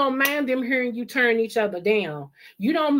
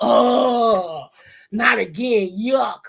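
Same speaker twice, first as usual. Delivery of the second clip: play-acted, loud, very slow, long disgusted oh; 5 dB louder than usual. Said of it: "and the kids go".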